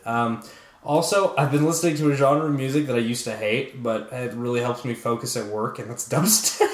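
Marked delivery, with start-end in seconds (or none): 5.8-6.7 words broken up by laughing throughout. Naming a music genre once hated: laughing while talking. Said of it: "I can't even say it without laughing".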